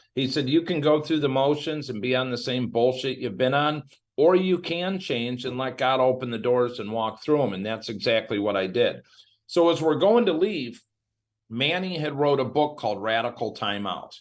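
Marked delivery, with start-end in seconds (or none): none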